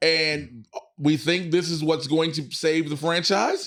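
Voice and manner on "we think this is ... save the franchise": franchise ending with a questioning rise. Talking about Scary Movie six saving the franchise: rising at the end like a question. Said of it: "I said that with a question mark at the end".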